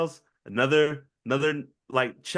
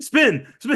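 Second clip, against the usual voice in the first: high, loud, eager voice. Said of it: "and they're like".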